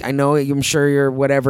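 ordinary delivery

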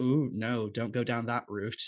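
normal talking voice

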